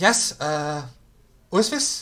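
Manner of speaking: put-on really young voice. Narrating a phone call, a voice answers after a couple of rings in a really young voice. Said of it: "you can hear this really young voice going".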